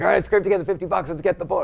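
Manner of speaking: high, fast, eager voice.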